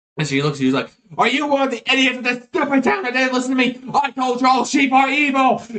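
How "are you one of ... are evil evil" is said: shrill, furious gnome voice yelling at full force. Voicing a gnome shouting at the town: gnome shouting at top of lungs. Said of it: "gnome just shouting at the top of his lungs".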